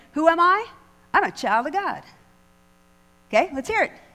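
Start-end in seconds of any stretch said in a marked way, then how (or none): 0.2-2.1 sassy, confident delivery full of attitude and swagger. Leading a practice call and response, showing the answer: with attitude. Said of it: "start it with tude".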